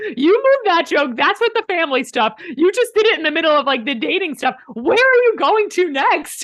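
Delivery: high, loud scolding voice. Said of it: "I'm like".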